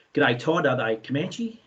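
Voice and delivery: ordinary talk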